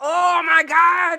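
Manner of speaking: slow, loud, high, mock exasperated groan.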